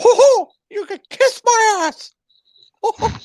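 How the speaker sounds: very high, loud squeaking voice. Imagining a cartoon character cussing, the speaker does a Mickey Mouse voice. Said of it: "Imagine if Mickey Mouse was um, cussing".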